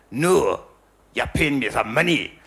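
poor attempt at Glasgow accent. Retelling a threatening demand from an interviewee: bad Glaswegian accent. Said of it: "that was terrible, wasn't it?".

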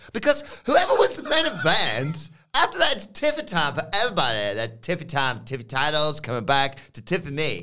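ridiculous, silly put-on voice, high and swooping. Recounting what was said when Tiffany Stratton's rival walked in, as Fallon Henley in a preposterous voice. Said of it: "in this preposterous voice".

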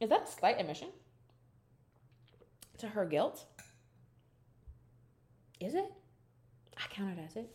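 hiccuping while talking. Discussing someone's confessional, speaking with the hiccups. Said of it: "I like have the hiccups right now".

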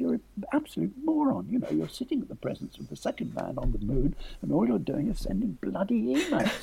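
soft, hissed stage whisper.

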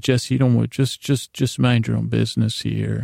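ordinary talk

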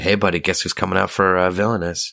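plain

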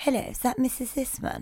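very quiet, barely audible posh accent. Trying out different voices, the speaker suggests and does a really quiet posh voice. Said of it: "Or you could do really quiet posh".

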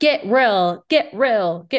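put-on Utah accent. Quoting Katie telling Schwartz to get real: imitating Katie's Utah accent. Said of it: "she has the Utah accent".

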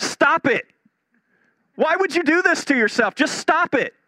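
acted, shrill shouting, pitched very high. Retelling a comedy sketch where the counselor tells a client: imitating Bob Newhart shouting. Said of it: "starts shouting".

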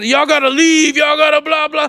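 hollering yell. Retelling people backstage telling them to leave: imitating someone yelling.

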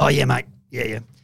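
loud eager voice. Retelling how a politician agreed to back the amendments: imitating a fellow politician. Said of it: "Great impression".

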